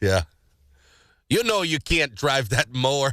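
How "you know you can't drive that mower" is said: terrible fake Canadian accent. Acting out police stopping a drunk driver: terrible canadian impersonation. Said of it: "we do a terrible Canadian impersonation".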